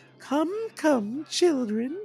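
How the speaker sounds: very high falsetto voice, floating upward. Praising Billy Bletcher's voice acting, quote the character in a Lawyer Goodwell falsetto. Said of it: "his falsetto".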